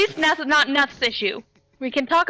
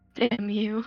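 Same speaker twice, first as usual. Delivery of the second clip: playful, good-natured, teasing mock scolding; 4 semitones lower, 7 dB quieter than usual. Playfully slapping Tick in character: playful. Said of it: "playfully slap Tick and be like".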